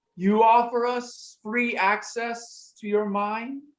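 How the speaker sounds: unhurried, slow, high-pitched voice. A voice speaks from behind Skippy, offering a deal, in a high-pitched voice. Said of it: "the high pitched voice".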